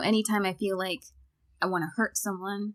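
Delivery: normal talking voice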